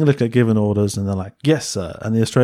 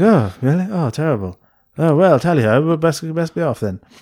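put-on drunk voice, higher pitched; 6 semitones higher than usual. Retelling how a character who is drunk the whole time answers: imitating drunk Julian Ryan Tut. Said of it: "quite drunk that whole time".

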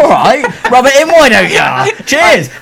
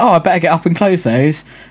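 ordinary delivery

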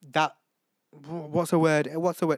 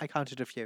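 much softer, quiet aside.

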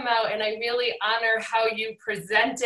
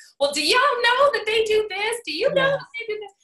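put-on very high, nosy, gossiping old-lady voice; 12 semitones higher, 4 dB louder than usual. Describing a recorded podcast episode, doing the In Living Color porch lady voice. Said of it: "like the two ladies out the front porch".

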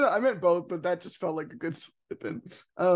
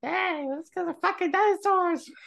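put-on cartoon kid voice, much higher pitched; 12 semitones higher than usual. Trying a character voice, a speaker does an Eric Cartman impression. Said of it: "Is that Eric Cartman?".

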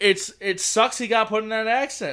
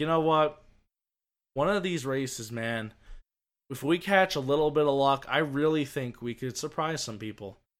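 soft, super calm voice. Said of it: "It was super calm".

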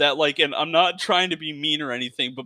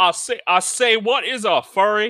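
put-on cartoon Southern rooster voice, higher and louder; 5 semitones higher, 4 dB louder than usual. Continuing the joke about everyone sounding like Foghorn Leghorn. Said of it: "sound like Foghorn Leghorn".

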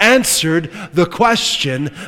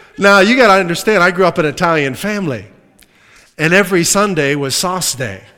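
ordinary delivery

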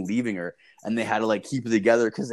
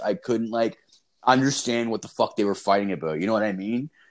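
normal talking voice

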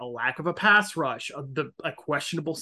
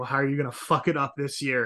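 put-on joking teasing tone, lower pitch; 2 semitones lower than usual. Speaker recalls his first remark when previewing the Colts-Texans game, retelling a joking question. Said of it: "the very first thing I said was jokingly".

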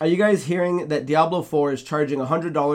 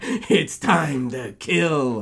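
tough, hard-man action-movie hero voice. Discussing whether Link should talk, the speaker mocks the idea in a Duke Nukem voice. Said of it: "this fucking Duke Nukem voice".

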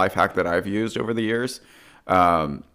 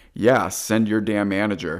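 put-on demanding tone. Diner retells what he says when the server checks in, mock-demanding tone. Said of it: "if I say it with that tone".

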